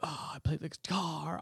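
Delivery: very quiet murmur, leaning on long drawn a. Retelling an actor's line from the movie with a Keanu Reeves twinge. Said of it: "got a Keanu twinge to it".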